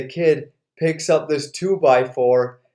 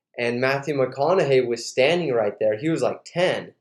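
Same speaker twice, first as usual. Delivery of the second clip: plain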